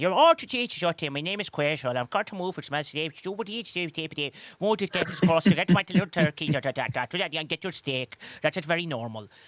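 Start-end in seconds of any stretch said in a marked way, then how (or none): 0.1-8.2 put-on Austrian accent blended with Irish accent. Imitating a teammate back from Dublin: imitating Quasel's Austrian-Irish accent. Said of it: "that is what Quasel sounds like right now".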